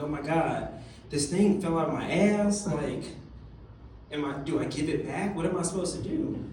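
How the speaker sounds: ordinary delivery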